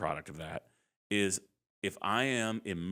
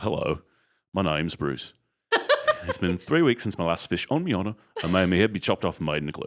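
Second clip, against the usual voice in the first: Australian-accented creature voice, louder; 7 dB louder than usual. Parent shows the voice their kids love to hear: Bruce the Shark impression. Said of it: "that is not an easy accent".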